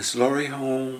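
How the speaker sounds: soft, bashful, timid, slightly high voice. Retelling how he asked Grandma at the side door, imitating a quiet bashful voice. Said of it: "a quiet voice and bashful".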